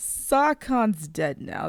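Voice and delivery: loud, slowed speech.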